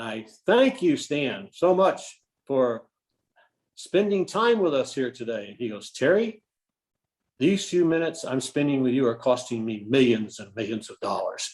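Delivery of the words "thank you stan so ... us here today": mock, mildly raised, speaking-up voice. Speaker recalls thanking a hard-of-hearing man before a full room, loud voice. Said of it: "then I go into my my loud voice".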